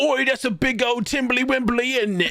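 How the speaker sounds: put-on British accent, pitched way up high. Trading jokes about how british people talk, doing a mock british accent. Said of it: "British people be like".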